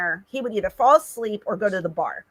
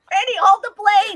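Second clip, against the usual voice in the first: put-on scream, higher pitched; 11 semitones higher, 4 dB louder than usual. Retelling a friend running late to board: imitating someone screaming. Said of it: "And he's screaming".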